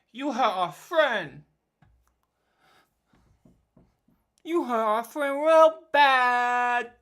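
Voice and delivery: very loud, slow, lumbering, drawn-out giant voice. Voicing a giant in the game: giant voice. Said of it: "I'm trying to go for giant".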